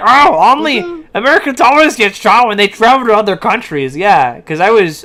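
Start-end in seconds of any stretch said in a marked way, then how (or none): 0.0-4.0 sneering, belittling, know-it-all woman's voice. Retelling what a woman in a video claimed, mocking imitation of her. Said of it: "She's like".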